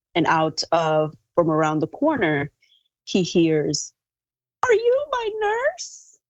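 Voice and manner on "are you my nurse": put-on very high-pitched elderly woman's voice. Retelling what a voice called from around the corner, in an elderly female voice. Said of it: "elderly female voice".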